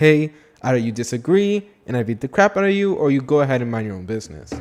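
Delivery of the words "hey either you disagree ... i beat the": usual speaking voice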